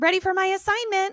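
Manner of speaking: very high, sugary-sweet voice. Recapping a Buffy episode, the speaker imitates Cordelia, mock-sweet. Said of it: "Cordelia very sweetly is like".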